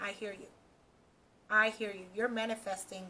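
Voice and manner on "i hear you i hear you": plain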